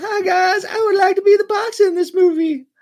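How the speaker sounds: shrill, very high, loud, wavering put-on voice. Retelling what someone said when they saw the movie, warbly voice. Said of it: "that's basically what it was".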